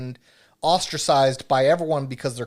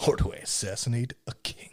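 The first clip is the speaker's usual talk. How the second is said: breathy, hushed, dramatic movie-trailer announcer whisper; 4 semitones lower, 7 dB quieter than usual. Repeating a question for the group, in a movie announcer voice. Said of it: "Movie announcer voice".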